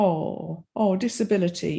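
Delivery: mock sorrowful, pity-laden tone. Imitating how people's tone of voice changes, mock-pitying tone. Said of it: "the whole tone of voice changes".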